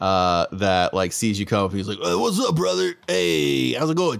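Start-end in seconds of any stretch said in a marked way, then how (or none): 2.0-4.2 put-on big meathead orc voice, higher. Voicing a big orc at the wrestling club table: big meathead orc voice. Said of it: "there's a big orc".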